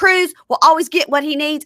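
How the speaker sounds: high defensive voice. Retelling the answer Brittany gave on a date: imitating Brittany getting defensive. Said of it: "she gets all defensive".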